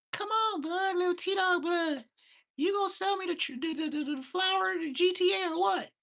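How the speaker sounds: very high, squeaky voice not yet broken. Imitating a younger kid from the neighborhood: imitating a high-pitched young voice. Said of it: "that high-ass voice where his nuts ain't dropped".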